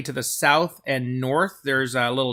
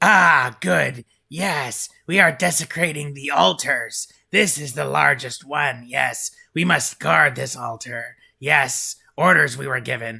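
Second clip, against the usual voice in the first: voice of a devil. Voicing a devil explaining they are desecrating the altars: voicing a devil. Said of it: "He says".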